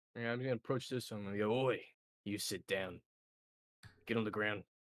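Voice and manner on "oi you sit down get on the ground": stern, firm, commanding tone. Ordering a bird to sit down on the ground: stern voice. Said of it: "stern voice".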